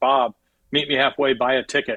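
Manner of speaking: big, full, booming voice. Answering a man's prayer in the story, in a big booming voice. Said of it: "this big booming voice says".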